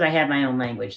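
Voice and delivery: ordinary talk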